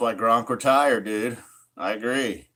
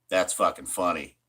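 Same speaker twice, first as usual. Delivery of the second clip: ordinary talk, nothing marked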